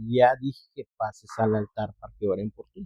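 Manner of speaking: very soft, gentle and quiet voice. Retelling what a voice said about going to the altar: imitating a very soft voice. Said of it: "la otra voz muy suave y me dice".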